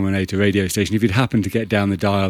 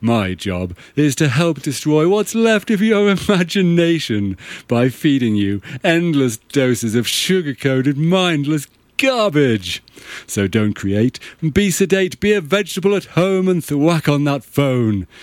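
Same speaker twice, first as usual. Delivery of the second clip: mock corporate radio DJ voice, higher; 7 semitones higher than usual. Mocking a DJ on a corporate radio station: imitating a corporate radio DJ. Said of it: "some guy there getting paid millions of dollars to play music he doesn't even like, and he's like".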